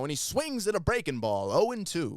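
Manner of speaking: vintage play-by-play announcer. Imitating a baseball announcer calling a swing, old-time baseball announcer voice. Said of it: "he always talks like this".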